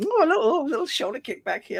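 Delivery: mock jaunty boarding-school voice. Imitating a photo subject at a fancy boarding school: imitating someone being jaunty. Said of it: "he's being all jaunty up, like".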